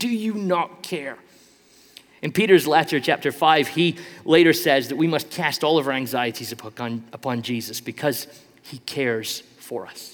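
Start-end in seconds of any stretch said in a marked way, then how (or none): 0.0-1.2 shout, higher. Retelling how Martha shouts at Jesus: imitating Martha shouting. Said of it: "she shouts at Jesus".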